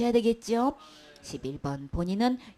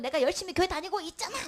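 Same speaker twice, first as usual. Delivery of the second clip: mock angry voice, higher pitched; 7 semitones higher than usual. Retelling what a churchgoer answers when questioned: imitating an angry churchgoer. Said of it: "아니 근데 왜 화를 내?".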